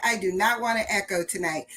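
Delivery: ordinary talk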